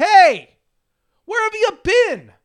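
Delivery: very high called-out yell. Retelling calling out to a bystander watching the game: imitating own past yell. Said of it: "I yell to the guy".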